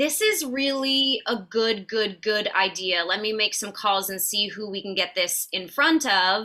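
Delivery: ordinary talk, nothing marked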